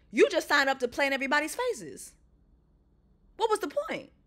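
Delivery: angry, escalating rant with swooping pitch. Watching a show and calling out someone who went on it, getting pissed off. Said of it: "now I'm getting pissed".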